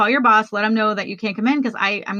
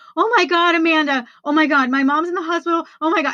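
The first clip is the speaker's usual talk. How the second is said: acted-out panicked crying, high and bawling; 7 semitones higher than usual. Retelling a voicemail left for their best friend during a panic attack, reenacting bawling. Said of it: "And I am bawling".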